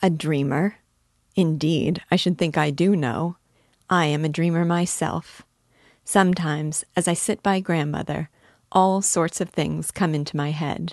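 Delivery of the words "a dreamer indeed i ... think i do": ordinary delivery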